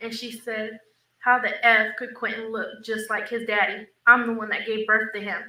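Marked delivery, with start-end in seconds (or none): none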